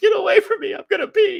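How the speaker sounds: mock shrieking, very high and loud, through giggles. Retelling what a laughing daughter said after being thrown: imitating a daughter laughing. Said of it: "And she's got the giggles".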